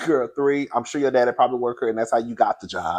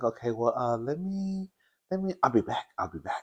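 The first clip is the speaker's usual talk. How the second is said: very quiet, soft-spoken voice; 8 dB quieter than usual. Retelling what a man said while the speaker was irritated with him, real quiet, soft voice. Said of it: "he got like a real quiet, soft voice".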